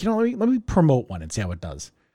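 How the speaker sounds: plain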